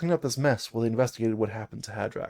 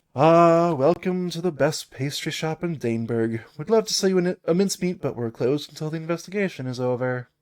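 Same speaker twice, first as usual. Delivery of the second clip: bored, uninterested voice; 4 semitones higher, 4 dB louder than usual. Voicing a dwarf behind a shop counter as you walk in: bored Shortclaw voice. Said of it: "a dwarf woman. She's bored".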